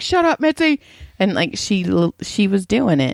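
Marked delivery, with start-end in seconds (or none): 0.0-0.8 mock high-pitched yell. Retelling how they yelled at the dog to be quiet: imitating own yelling. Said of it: "I felt so bad 'cause I yelled at her".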